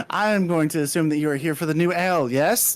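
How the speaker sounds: hyper, high-pitched, over-eager, in-your-face innkeeper voice. Voicing an eagerly approaching tavern greeter: hyper, in-your-face enthusiastic character. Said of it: "hyper, very in your face enthusiastic".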